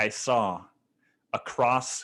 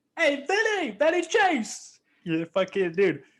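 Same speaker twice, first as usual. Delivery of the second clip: put-on New York accent, much higher, slower. Describing the Entourage sidekick for listeners, Turtle New York accent impression. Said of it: "He's got like that New York accent".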